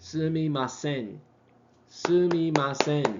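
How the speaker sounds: sumimasen with all syllables evenly, flatly stressed. Teaching japanese pronunciation, saying a word with even stress on every syllable. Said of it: "You hit them all the same".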